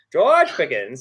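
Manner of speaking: loud, hammed-up put-on rustic farmhand voice. Saying a receiver's name like a Faulkner farm dude, put-on Arkansas farm dude voice. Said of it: "that's the Pickens voice".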